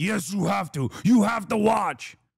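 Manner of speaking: insistent, bossy voice, laying down the law. Acting out a scene, Trump answering Charlie Kirk: Donald Trump impression. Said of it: "And then Trump's like".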